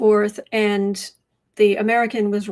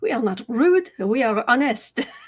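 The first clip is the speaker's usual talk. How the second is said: fake French accent, played for laughs; 2 semitones higher than usual. Repeating what his boyfriend said: fake accent. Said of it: "I'm going to do a fake accent".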